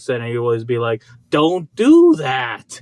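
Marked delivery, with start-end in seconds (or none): 1.3-2.8 put-on Boston accent, louder. Imitating a college teacher scolding about paint: imitating teacher's Boston accent. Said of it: "He had this Boston accent".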